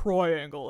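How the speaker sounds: 'triangle' said deep, low-pitched. Explaining how they told shapes apart in their head, low-pitched 'triangle'. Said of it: "I made triangle low pitched".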